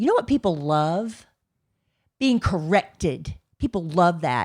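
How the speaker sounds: put-on grumpy, sour, foul-mood grumble. Retelling own remark made in front of the mother: imitating own foul-mood remark. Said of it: "you're in a foul mood".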